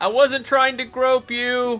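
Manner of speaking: shouting. Retelling a woman running away, the speaker re-enacts yelling at her. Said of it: "And then I'm yelling at".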